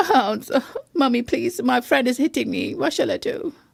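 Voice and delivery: pretend crying, fake sobbing. Role-playing a scenario where a friend hits you, complaining to mommy, mock crying. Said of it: "Cry, cry".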